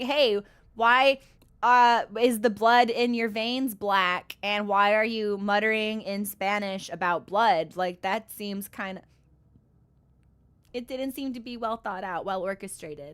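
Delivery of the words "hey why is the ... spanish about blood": ordinary delivery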